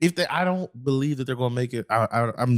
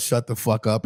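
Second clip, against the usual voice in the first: ordinary delivery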